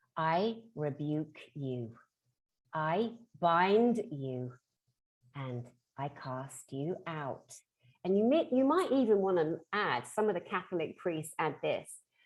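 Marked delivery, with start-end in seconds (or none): 0.2-7.6 steady, firm, very slow. Demonstrating a rebuke spoken while looking in the mirror: firm but not aggressive. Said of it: "Notice the firmness in the voice, not violent, it's not overly aggressive".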